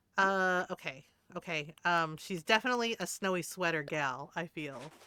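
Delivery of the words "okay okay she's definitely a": usual speaking voice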